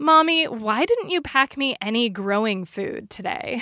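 loud, blunt put-on little-kid voice. Retelling what a child said while walking out: imitating a child saying loudly. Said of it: "he just says really loudly".

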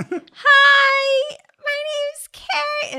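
put-on very high, slow, drawn-out little-kid voice. Retelling introducing herself at a reading, put-on childlike voice. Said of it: "I sound just like a child".

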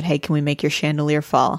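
ordinary talk

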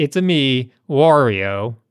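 very slow, deliberate, drawn-out video-game character voice. Showing how Wario introduces himself: Wario voice. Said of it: "That's how he says it".

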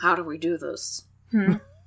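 slow, drawn-out, deliberate character voice. Acting out Walt Disney wondering how rivals beat him: Walt Disney impression. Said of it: "This is my Walt Disney impression".

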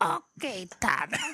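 put-on very high-pitched, gravelly little boy voice. Repeating the boy's reply to his dad, higher-pitched gravelly Toledo voice. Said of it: "That's the higher pitched gravelly voice".

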